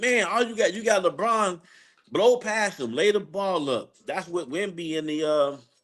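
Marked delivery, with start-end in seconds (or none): 0.0-3.9 put-on frustrated hollering, high and raised. Retelling watching a game on TV: imitating own yelling at TV. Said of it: "I'm sitting here yelling at the T V".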